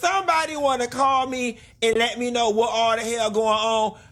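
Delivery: very high, bad put-on impression voice. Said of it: "That was a bad Portia impersonation".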